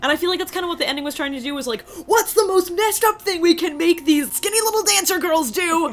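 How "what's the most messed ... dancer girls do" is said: excited, high-pitched screaming, totally carried away. Discussing the ending, getting carried away and screaming excitedly. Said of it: "I don't know why I'm screaming about this".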